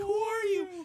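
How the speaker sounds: high, loud shout. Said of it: "He's like".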